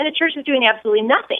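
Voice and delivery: rushed, hurried, too-fast talk.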